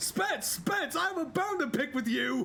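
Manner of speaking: very high, shrill, all-out top-of-the-lungs yell. Retelling what he yelled at the top of his lungs after a raid, imitating someone shouting. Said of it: "he said to the top of his lungs".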